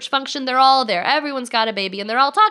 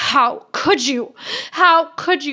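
re-enacted angry scream; 3 semitones higher than usual. Recalling lying on the bathroom floor, re-enact screaming at god. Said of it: "screaming at God".

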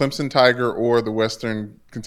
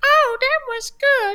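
squeaky, very high, drawn-out character voice. Acting out how the mascot would shrug off punches: Majin Buu voice. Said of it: "the Majin Buu theory".

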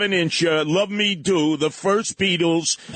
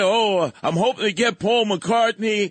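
acted-out complaining, railing rant; 3 semitones higher than usual. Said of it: "he's railing".

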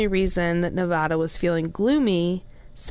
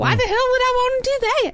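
very high put-on woman's voice, pitched way up; 4 dB louder than usual. Retelling a woman's reply to a listener, imitating her voice. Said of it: "Is that what she sounds like?".

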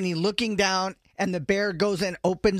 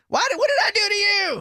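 put-on, shrill, very high-pitched screaming; 12 semitones higher, 3 dB louder than usual. Retelling a kayaker yelling at an attacking goose: imitating someone screaming. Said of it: "He was just screaming".

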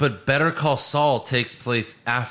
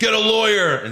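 mock yell, much higher; 10 semitones higher, 5 dB louder than usual. Retelling a story, the speaker quotes a skinny security guard, imitating a yell. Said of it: "the skinny security guard yelled at him like".

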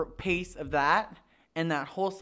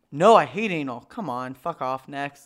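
angry, raised, dismissive voice; 3 semitones lower, 6 dB louder than usual. Answering a question about enjoying anal: angry. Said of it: "I like how angry you get over that one".

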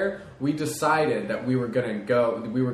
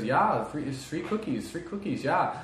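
put-on thick Swedish accent, slower; 3 semitones higher, 4 dB quieter than usual. Retelling what a Swedish lady said to them, in a thick Swedish accent. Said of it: "I hear her thick Swedish accent".

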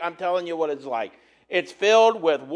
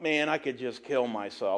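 low, very quiet mutter under the breath; 6 semitones lower, 9 dB quieter than usual. Retelling a remark made while clowning around at a conference: imitating own muttering. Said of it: "I muttered something about".

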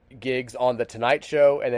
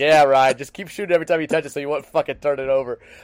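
louder, put-on mock sarcastic, snarky voice; 2 semitones higher, 4 dB louder than usual. Retelling what the coach told a player after a three: imitating Rick, sarcastic and snarky. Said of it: "just so sarcastic and snarky with his players".

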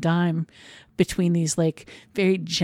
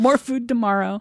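mock yelling, pitched higher; 5 semitones higher than usual. Retelling a film scene of yelling at pigeons: imitating May Whitty yelling. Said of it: "she's yelling, like".

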